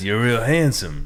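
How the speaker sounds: put-on cowboy voice. Giving a recorded compliment: Arthur Morgan voice. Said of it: "That was a very good Arthur Morgan".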